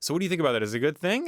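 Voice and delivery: uptalk rising on that and thing. Showing how ending every sentence like a question sounds, rising question intonation. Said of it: "If I end every sentence with a question mark".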